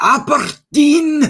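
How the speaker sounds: high, slow, bad put-on Scottish accent. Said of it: "try and do that Scottish accent".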